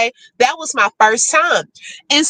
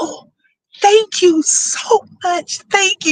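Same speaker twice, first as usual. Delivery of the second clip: stage whisper, raised pitch; 7 semitones higher than usual. Recounting thanking people while others waited in the interview line, retelling a whisper. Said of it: "whispering it and stuff like that".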